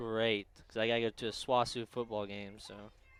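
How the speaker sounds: dutiful, joyless, grudging, unenthusiastic tone. Answering a remark about tomorrow's sunny weather: unenthusiastic. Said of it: "don't sound so enthusiastic about it".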